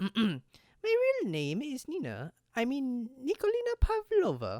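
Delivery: put-on voice of a Russian girl. Voicing a game character who reveals her real name: put-on Russian girl voice. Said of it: "a girl voice".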